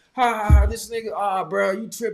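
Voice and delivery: loud, high, ridiculing, mocking laughter. Acting out teammates who laugh to ridicule him: imitating mocking teammates. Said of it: "they're trying to ridicule me".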